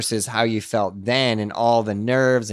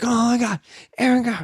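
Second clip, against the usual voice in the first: high, excited, starstruck put-on kid freaking out; 11 semitones higher than usual. Retelling how a kid at the skate park reacted: imitating a kid freaking out. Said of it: "he starts freaking out".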